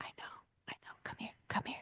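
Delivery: hushed, soft, soothing, calming whisper. Showing how they respond to someone having a loud meltdown, whisper. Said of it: "I'll just like whisper".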